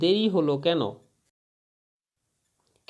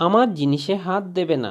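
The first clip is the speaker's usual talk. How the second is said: ordinary talk, nothing marked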